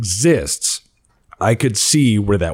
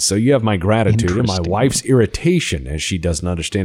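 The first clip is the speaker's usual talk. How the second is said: usual speaking voice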